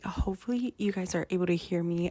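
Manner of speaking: whispered speech. Talking to viewers over dinner while mom naps nearby, whispering. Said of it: "I am whispering here".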